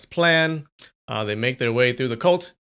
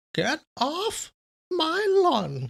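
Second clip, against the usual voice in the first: put-on very high, sing-song, swooping old geezer voice. Speaker tries out voices, attempting a high one; high old-guy voice. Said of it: "How do you do a high one?".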